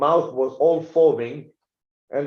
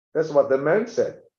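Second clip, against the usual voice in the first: usual speaking voice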